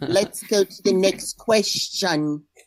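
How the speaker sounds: slow, drawn-out put-on Australian accent. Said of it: "That's Princess January's Australian accent".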